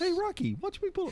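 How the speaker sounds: terrible, botched, very high squeaky character voice. Speaker showing off impressions they admit are terrible, a terrible impression. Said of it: "You heard my impressions".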